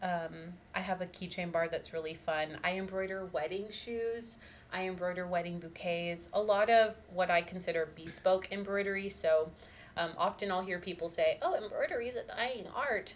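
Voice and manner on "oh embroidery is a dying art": put-on high old person voice. Quoting what people often say to you: imitating an old person's voice. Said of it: "I like that old person voice".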